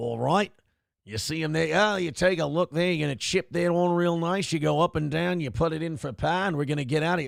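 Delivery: poor put-on Australian accent. Asked to redo the golf commentary as an Aussie, a not very good Aussie accent. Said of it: "now do this as an Aussie".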